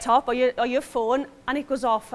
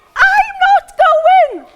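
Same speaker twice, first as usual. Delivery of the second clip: put-on very high, very loud, shrill child's scream; 11 dB louder than usual. Telling how Harrison suddenly screamed while walking behind her: imitating Harrison screaming. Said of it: "he just screams".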